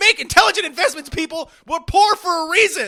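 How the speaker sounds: worked-up, heated outburst, loud and high. Speaking to listeners right after apologizing for getting heated, heated. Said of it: "I get really heated".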